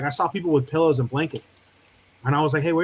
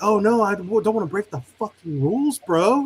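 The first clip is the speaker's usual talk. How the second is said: put-on, exaggerated, over-the-top sarcastic delivery; 5 semitones higher than usual. Retelling turning down the extra pillow he was offered, retelling an over-the-top reply. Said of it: "I was so over the top".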